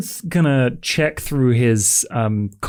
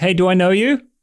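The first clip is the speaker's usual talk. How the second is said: high, calling-out shout; 7 semitones higher, 4 dB louder than usual. In a story scene, calling after a woman walking away: shouting out to someone. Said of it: "Sean's just gonna like shout".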